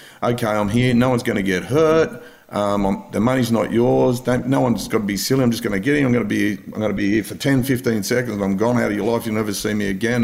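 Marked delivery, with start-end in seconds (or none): none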